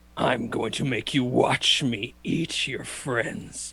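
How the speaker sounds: rough, gruff dragon voice. Game master speaking as the dragon looking at Faye, gruff dragon voice. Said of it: "he's going to say in this gruff voice".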